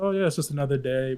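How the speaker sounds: normal talking voice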